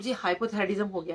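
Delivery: ordinary delivery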